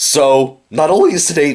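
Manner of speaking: voice breaking and cracking up high mid-phrase. Talking about Doctor Who while having a minor cold, voice cracking. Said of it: "that voice crack".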